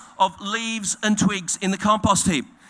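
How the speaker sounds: ordinary delivery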